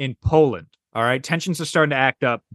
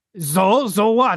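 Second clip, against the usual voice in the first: attempted German accent, pitched a bit higher; 6 semitones higher than usual. Acting out what Hitler might answer to a time traveler: German-accented Hitler voice. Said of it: "I can't do a German voice".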